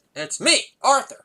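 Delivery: put-on angry little kid voice, very high and loud. Retelling a young son's reply on the phone: imitating an angry child. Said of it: "in a real angry tone".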